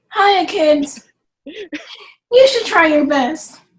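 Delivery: loud, cartoony cartoon-character voice for kids. In an online class, asked how to say it to kids, speaking like a cartoon character. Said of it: "I tried to say it like a cartoon character".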